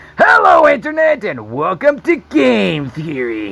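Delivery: wild, throat-straining crazy voice, swooping and high. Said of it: "has this like crazy voice".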